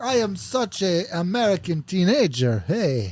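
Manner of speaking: put-on French accent in a teenage voice. Playing the daughter in an improvised family introduction, french accent. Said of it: "Why are you saying it in like a French accent?".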